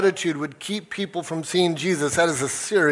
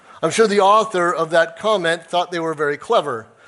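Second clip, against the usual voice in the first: ordinary talk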